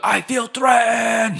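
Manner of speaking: mock whiny, high, slow wailing shout.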